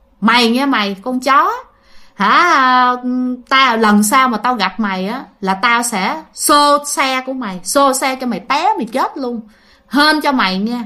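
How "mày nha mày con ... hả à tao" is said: usual speaking voice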